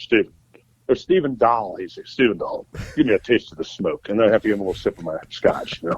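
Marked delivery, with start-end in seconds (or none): 2.0-4.1 put-on low-pitched voice with an English accent. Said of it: "he has that low English voice".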